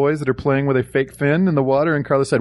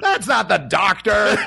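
acted huffy, outraged indignant yell, pitched up; 7 semitones higher than usual. Retelling how someone reacted to a movie remark, retelling an indignant yell. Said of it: "Paul indignantly yelled".

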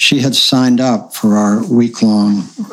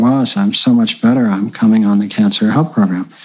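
normal talking voice

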